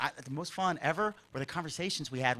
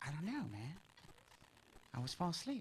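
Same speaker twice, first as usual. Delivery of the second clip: put-on whisper, quieter; 2 semitones higher, 15 dB quieter than usual. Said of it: "So we had to whisper".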